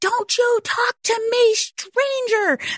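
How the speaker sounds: put-on shrill, very high, drawn-out little-kid scream. Retelling how a boy at a deli counter screamed at the speaker, imitating a kid screaming. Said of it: "screams out".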